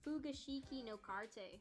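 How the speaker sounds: Americanized, american-accented pronunciation. Trying to pronounce a japanese music title: americanized pronunciation. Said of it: "said it like a true American".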